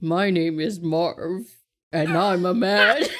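put-on manly guy voice, attempted man's voice. Repeating a line as prompted, doing their best guy voice. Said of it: "do your best guy voice".

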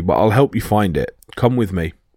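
plain

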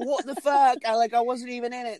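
very high-pitched put-on British accent. Imitating Becky reacting outside the ring, in a British accent. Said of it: "That's British. That's not her accent".

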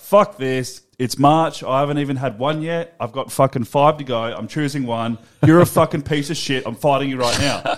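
ordinary talk, nothing marked

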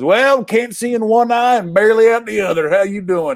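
put-on Southern Bayou accent. Retelling how a man from Philly gave you bad news on a call, use a put-on Southern Bayou accent. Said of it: "I don't know where the hell the accent comes from".

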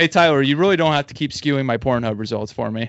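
normal talking voice

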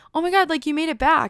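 all stoked, high, excited tone. Retelling a volunteer seeing her come back, imitating Greggy all stoked. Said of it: "he gets all stoked".

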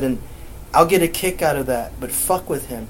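ordinary delivery

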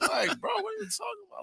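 baffled disbelief, pitched way up.

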